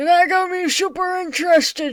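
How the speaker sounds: put-on old man voice. Narrating a story about joining a group, in an old man voice. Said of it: "So you get an old man instead!".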